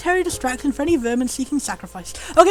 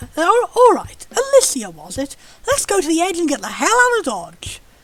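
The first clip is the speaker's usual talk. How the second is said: fancy, refined, upper-crust posh British voice. Speaker voices a character in a posh voice. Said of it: "what was the posh voice I started doing".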